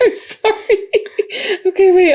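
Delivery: high, drawn-out laughing through tears. On a comedy podcast, apologizing while unable to stop laughing: laughing to tears. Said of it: "I'm like crying a little".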